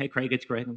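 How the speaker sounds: put-on nasal comic voice. Imitating a friend on the phone, in a Jerry Lewis voice. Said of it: "He talks like this. Kind of a Joe Pesci, kind of a, uh, Jerry Lewis kind of a thing".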